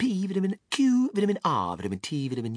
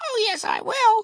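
tiny squeak, very high, loud and slow; 5 dB louder than usual. Reading the story aloud, the narrator gives Mike TV's reply in a tiny squeaky voice. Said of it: "squeaked the tiny voice of Mike TV".

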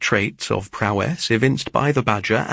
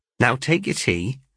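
ordinary delivery

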